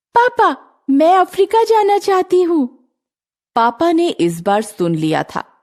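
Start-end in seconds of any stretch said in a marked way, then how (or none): 0.1-2.8 very high-pitched, loud shout. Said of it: "चिल्लाकर कहा".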